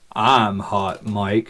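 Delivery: low, quiet, deep voice. Retelling someone answering over the radio net, in a deep voice. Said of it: "we hear a deep voice".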